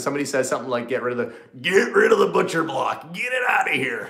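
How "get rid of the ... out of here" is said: pitched-up cartoon character voice. Imagining a viewer demanding the butcher block go: Yosemite Sam voice. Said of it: "almost like, um, uh, Yosemite Sam or something".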